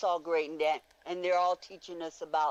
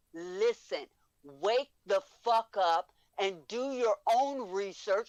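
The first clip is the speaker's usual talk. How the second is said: raised, shouting voice; 5 semitones higher than usual. Speaker addresses anyone out there who will listen, shouting. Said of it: "I'm shouting to anybody out there".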